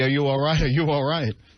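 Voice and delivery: ordinary talk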